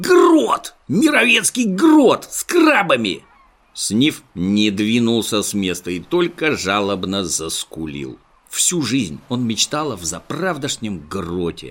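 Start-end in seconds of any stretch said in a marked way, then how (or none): 0.0-3.2 delighted, joyful whoop, very high-pitched. A monkey calls back from behind a rock: joyful shout. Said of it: "радостный вопль".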